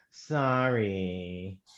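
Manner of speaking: passive-aggressive, insincere, drawn-out sorry. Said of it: "I'm going to do it in the right tone".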